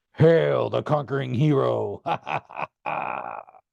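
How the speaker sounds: slow, sinister, evil laughing voice. In a dream, an evil voice hails the narrator: evil laughing voice. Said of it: "Evil voice began to laugh".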